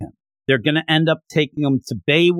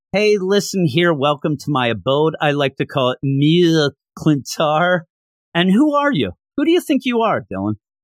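ordinary talk

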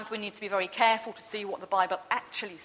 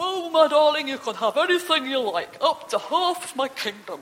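put-on unconvincing, raised, pitched-up drunk man voice; 6 semitones higher, 8 dB louder than usual. Retelling a story of a drunk ruler speaking to his little girl, imitating a drunk man. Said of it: "Can't do a very good impression of a drunk man".

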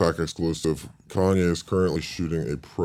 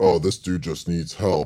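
ordinary talk, nothing marked

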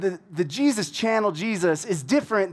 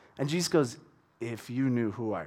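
ordinary talk, nothing marked

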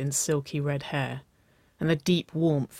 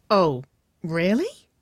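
amused laugh through the words, raised voice; 4 semitones higher, 5 dB louder than usual. Narrator reads Nicole's reply to Waverley, laughing. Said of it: "Nicole laughed".

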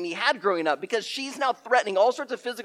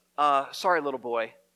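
indistinct mumbling, words running together; 6 semitones lower than usual. Retelling a woman apologizing before leaving: imitating someone mumbling. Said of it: "she mumbles".

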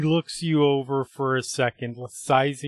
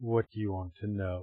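sudden shift to a deeper, low, soft tone; 4 semitones lower, 8 dB quieter than usual. Narrating a scene, a man answers the woman who just relaxed, deeper tone. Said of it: "He speaks in this sort of deeper tone".

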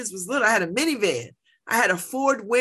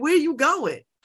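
slick, smooth-talking, smug tone; 4 semitones higher than usual. Retelling being pulled over: imitating an officer talking slick. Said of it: "talking a little slick to me".

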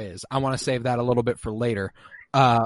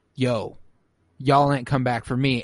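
ordinary talk

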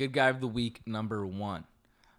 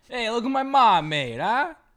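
bad, very loud, very high put-on Italian accent; 13 semitones higher, 10 dB louder than usual. Imitating a guy bringing back food for the boys, shitty italian accent. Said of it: "I do the shittiest Italian accent".

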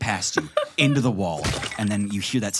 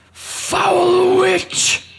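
very loud, very high shrieking monster cry; 8 dB louder than usual. Voicing a creature being torn apart: crying out. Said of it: "It cries out at you".

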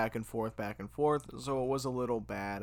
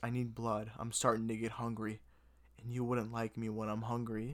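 completely earnest, soft, grave, dead-serious delivery; 6 dB quieter than usual. Retelling what a man said to the speaker, imitating him saying it seriously. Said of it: "he says it so seriously".

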